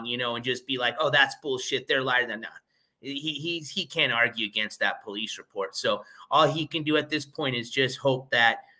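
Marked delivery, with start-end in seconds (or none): none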